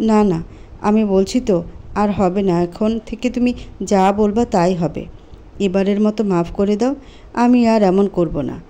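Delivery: plain reading voice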